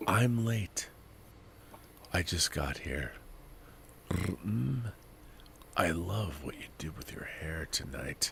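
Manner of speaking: sultry, seductive whispered bedroom voice. Reading a viewer's super chat aloud in a seductive bedroom voice. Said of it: "read the first part like in, in a bedroom voice".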